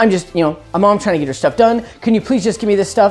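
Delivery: imitated panicked voice. Retelling a caller's trick phone call to a phone company: imitating a panicked caller. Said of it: "she sounded panicked".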